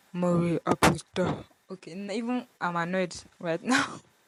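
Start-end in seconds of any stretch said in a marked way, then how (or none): 0.2-1.5 put-on very deep, low-pitched voice. Picturing the situation, imitating Felix saying the phrase: Felix deep voice. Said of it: "I'll be trying to imitate Felix deep, deep voice".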